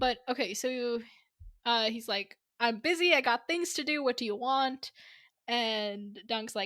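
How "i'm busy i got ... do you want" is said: put-on Scottish accent.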